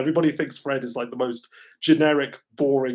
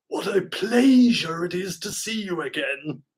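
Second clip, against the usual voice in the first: slow, drawn-out, pitched-up tone dripping with sarcasm; 6 semitones higher than usual. Retelling a line from a cartoon episode: imitating Megatron sarcastically.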